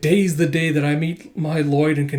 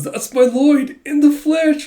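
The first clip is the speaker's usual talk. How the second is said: put-on lovestruck swoon, very high, loud and dreamy; 12 semitones higher, 5 dB louder than usual. Retelling a scene where Becky meets Lloyd, Becky swooning voice. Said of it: "she's swooning and she goes".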